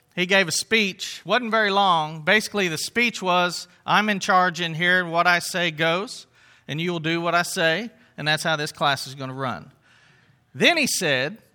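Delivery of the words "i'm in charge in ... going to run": usual speaking voice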